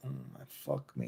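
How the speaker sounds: very quiet, breathy whisper under the breath. Retelling what a drunk girl said under her breath: imitating a whisper. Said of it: "whispering under her breath".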